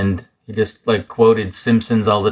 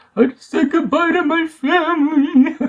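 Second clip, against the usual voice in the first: mock high, tearful, half-crying voice. Retelling what a crying new companion said: imitating someone crying. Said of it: "kind of crying".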